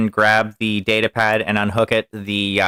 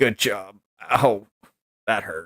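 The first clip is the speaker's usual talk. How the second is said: pained groaning, quieter; 5 dB quieter than usual. Narrating a game, voicing a hurt character after a fight: groaning in pain. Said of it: "he groans and is like".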